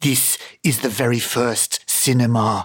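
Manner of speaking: put-on voice, every word drawn out very slowly. Retelling what someone said about early animal drawings, as a Herzog impression. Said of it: "That was my Herzog impression".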